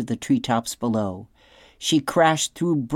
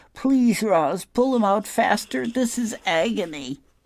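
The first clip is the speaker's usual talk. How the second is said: wincing, pleading, high, through clenched teeth; 8 semitones higher than usual. Narrator reading the fox's plea to Roz as she pulls quills, speaking through teeth in pain. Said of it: "The fox winced in pain and said through his teeth".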